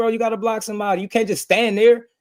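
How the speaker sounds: very high-pitched screaming. Retelling screaming at a son to block in football: imitating own screaming. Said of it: "I'm screaming and stuff".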